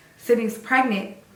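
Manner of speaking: usual speaking voice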